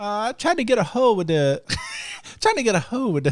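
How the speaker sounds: put-on high, sing-song phone-agent voice. Retelling what the woman said after the long hold, impersonating James. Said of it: "That's my impersonation of James".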